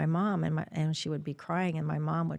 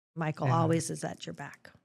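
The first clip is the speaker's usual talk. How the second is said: usual speaking voice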